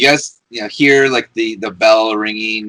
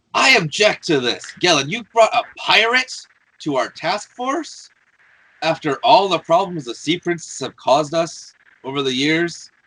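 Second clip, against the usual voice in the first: raised, protesting voice, pitched high; 7 semitones higher than usual. Eleander objects to Gellin in front of the task force, raised voice. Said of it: "he's gonna raise his voice".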